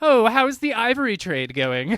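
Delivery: very high, very loud, shrill cotillion-society voice. Mocking a film moment that took her aback, in a mock eighteenth-century cotillion voice. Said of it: "like a eighteenth century cotillion".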